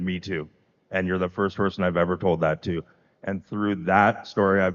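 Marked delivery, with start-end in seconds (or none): none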